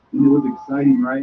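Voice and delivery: ordinary talk, nothing marked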